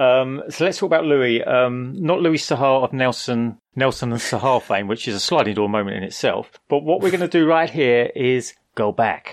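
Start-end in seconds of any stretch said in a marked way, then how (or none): 6.7-9.3 laid-on, put-on American accent. Introducing the next story to the others, in an American accent. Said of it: "Did you just do an American accent?".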